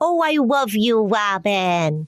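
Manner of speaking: goofy cartoonish silly voice, one name drawn out. Imitating how she would say she loved the speaker, a silly voice. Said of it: "in a silly voice".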